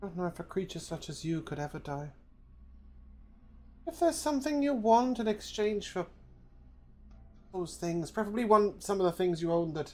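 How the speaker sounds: hushed, very quiet voice. Speaking in character to a creature, offering an exchange: speaking very quietly. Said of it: "I will very quietly say".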